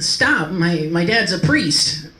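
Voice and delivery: high, loud, pleading yell.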